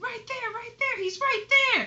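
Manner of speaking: thrilled screaming, very high pitched. Speaker acts out what she screamed at the time, retelling excited screaming. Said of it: "but I'm just screaming".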